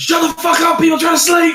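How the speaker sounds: furious, loud, high yelling.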